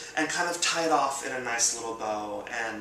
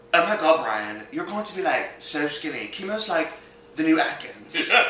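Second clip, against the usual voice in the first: really bad put-on Australian accent, high and loud; 5 semitones higher, 5 dB louder than usual. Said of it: "that was a really bad accent".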